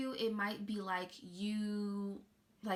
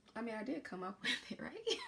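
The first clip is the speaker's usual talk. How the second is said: laughing and chuckling through words; 3 dB quieter than usual. Joking about keeping an affirmation for oneself, laughing while talking. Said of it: "I'm cracking up now".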